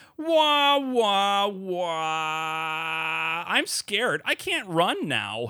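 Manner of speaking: very slow, high, frightened cry with long wahs. Playing a scared character in an improvised sitcom scene: acting scared as Teen Rex. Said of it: "I am once again portraying Teen Rex".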